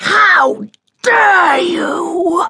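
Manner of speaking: shrill, furious, outraged scream. A duke answers his son's insult: screaming. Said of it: "screamed the Duke".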